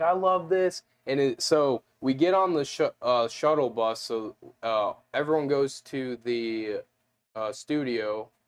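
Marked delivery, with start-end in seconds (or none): 0.0-0.8 over-the-top, high, put-on gushing enthusiasm. Retelling acting excited to get on the show: exaggerated put-on enthusiasm.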